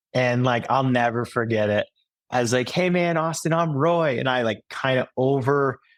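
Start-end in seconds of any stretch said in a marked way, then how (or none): 2.7-4.1 play-acted, overdone, confident, puffed-up swaggering tone. Retelling introducing themself to someone for the first time, in an over-amplified voice. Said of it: "I definitely over amplified my voice".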